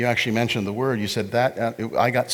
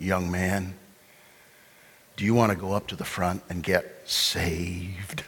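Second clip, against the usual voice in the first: put-on deep-voiced man's whisper, lower; 3 semitones lower than usual. Retelling what a tall gentleman whispered in church: imitating a deep-voiced man whispering. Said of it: "a very deep voice".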